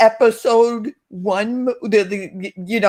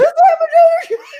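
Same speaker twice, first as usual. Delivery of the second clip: put-on screaming, higher and louder; 5 dB louder than usual. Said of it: "I'm screaming".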